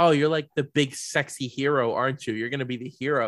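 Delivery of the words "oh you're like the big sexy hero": usual speaking voice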